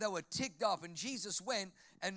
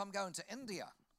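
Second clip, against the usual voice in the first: put-on New Zealand accent with Kiwi vowels; 5 dB quieter than usual. Quoting a woman who was asked where she's off to, in a kiwi accent. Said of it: "that's a Kiwi accent".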